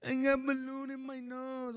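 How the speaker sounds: mock drawn-out, very high scared-child sobbing. Retelling a scared child at the top of the stairs: imitating a crying child. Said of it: "She was fucking crying at the top of the stairs".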